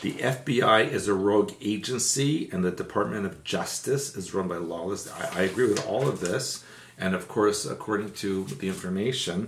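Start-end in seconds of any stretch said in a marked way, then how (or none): none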